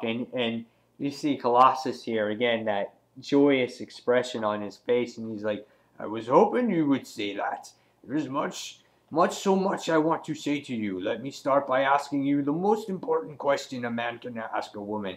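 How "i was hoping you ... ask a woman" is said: put-on Russian accent. Voicing Colossus's reply to a woman who needs to talk, maybe-Russian accent. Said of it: "I don't know if that's Russian accent".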